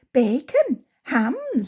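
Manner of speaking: cheerful, bright tone. Reading a story aloud, a pig answering why she was stolen: cheerful reply. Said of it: "replied Pigwig cheerfully".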